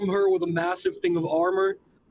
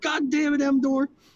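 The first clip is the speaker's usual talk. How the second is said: shouting, high and raised; 7 semitones higher than usual. Playing a character who drops the armor and yells at a companion: yelling at emdor. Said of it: "and yells at Emdor".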